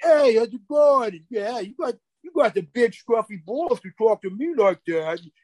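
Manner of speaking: mock Italian neighborhood voice. Retelling how Tony talks in an Italian neighborhood: imitating Tony in an Italian neighborhood. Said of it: "Is there a split personality there?".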